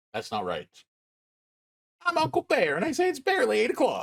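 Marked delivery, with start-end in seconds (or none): 2.0-4.0 very high-pitched cartoon bear voice. Redoing the Uncle Bear line after a failed first try, Monokuma voice. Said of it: "I was trying to do my Monokuma".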